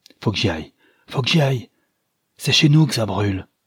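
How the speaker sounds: calling out, crying the words out. A man pushes past a woman and slams the door, shouting. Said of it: "battit la porte en criant".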